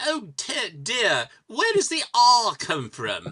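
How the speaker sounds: put-on British accent.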